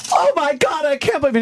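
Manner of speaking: very high, put-on shocked voice, gasped out. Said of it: "when she goes".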